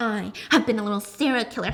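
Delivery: put-on psychopathic, evil villain voice. Mocking how thriller characters turn at the end: put-on psychopathic evil voice. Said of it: "psychopathic evil".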